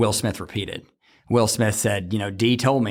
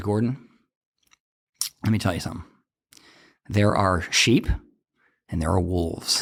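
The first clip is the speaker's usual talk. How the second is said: put-on dead serious voice, pitched lower; 3 semitones lower than usual. Retelling a police officer's answer to a casual question: imitating Kurt Driver, dead serious. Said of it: "he just got dead serious".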